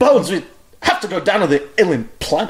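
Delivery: overdone, pause-riddled starship captain impression. Showing how a Captain Kirk impression goes, pausing a whole lot. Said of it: "can anybody do Captain Kirk?".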